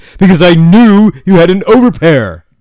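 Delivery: defensive voice, high and loud. Retelling how the other player answered a question about his hand: imitating a defensive reply. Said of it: "very defensively".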